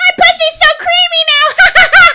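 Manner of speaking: shrill, very loud, slowly drawn out. Retelling a woman's line, imitating her saying it loudly. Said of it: "But she said it so loud".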